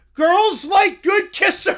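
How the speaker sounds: simple caveman talk. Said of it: "I did not say talk like a caveman".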